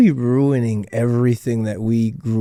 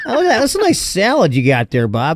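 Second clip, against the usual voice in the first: sing-song pitched-up voice; 7 semitones higher than usual.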